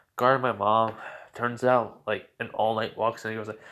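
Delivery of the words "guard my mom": normal talking voice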